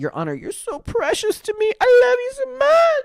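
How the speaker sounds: very high, swooping, drawn-out gushing. Retelling what the defendant said to the judge, imitating Ruby Franke buttering up the judge. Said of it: "it sounded like she went".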